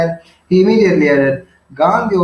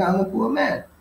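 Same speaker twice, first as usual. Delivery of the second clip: mock mournful, sorry, soft, high little voice; 7 semitones higher, 6 dB quieter than usual. Explaining a story character's tone while reading his line: mock-sad voice. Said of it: "Here it's in a kind of a sad voice, right? He says like".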